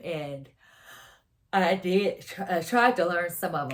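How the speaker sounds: sleepy speech through a yawn. Telling a long story on camera, yawning while talking. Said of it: "I apologize for the yawning".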